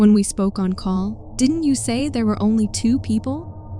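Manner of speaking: ordinary talk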